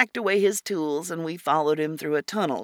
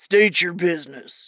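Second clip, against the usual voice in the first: rumbling troll voice, like a stone giant; 4 dB louder than usual. Narrator reading a troll waiting inside a station entrance, rumbling troll voice. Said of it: "he said in a rumbling voice".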